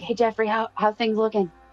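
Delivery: loud shout-whisper, projected upward. A player calls up to another character in the game, in a shout-whisper. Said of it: "one of those shout whisper things".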